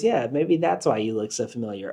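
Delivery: put-on playful laughter. Retelling a woman's remark to a man, retelling playful laughter. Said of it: "laughing playfully".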